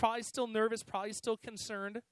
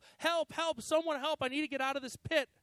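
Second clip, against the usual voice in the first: mock high, shouted screaming; 5 semitones higher than usual. Telling a story about a man stuck in a pit: acting out screaming for help. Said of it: "he keeps screaming for help".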